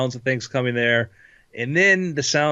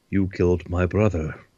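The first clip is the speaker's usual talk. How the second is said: put-on very menacing, low, threatening British accent; 6 semitones lower than usual. Game master voicing an opponent who backflips onto the ropes, very menacing british accent. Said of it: "says in a very, very menacing British accent".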